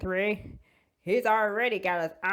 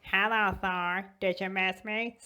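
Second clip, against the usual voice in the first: put-on small child's voice; 5 dB quieter than usual. Retelling a made-up movie scene, acting out a little kid as Loki. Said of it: "says some little kid".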